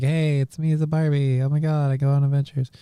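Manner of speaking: put-on small child's soft, hushed chatter. Imitating a little girl who gets a Barbie of herself: imitating little Tiffany. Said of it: "little Tiffany gets her little, like, Barbie, and she's like".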